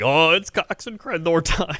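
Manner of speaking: mock buzzing eager excitement, high gushing tone. Teasing a co-host about getting excited on the show, imitating an excited co-host. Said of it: "You're just so excited. You're just sitting there, like, vibrating".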